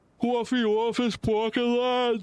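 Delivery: put-on high-pitched Boston accent.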